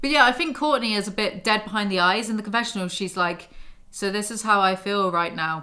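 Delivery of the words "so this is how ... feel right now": plain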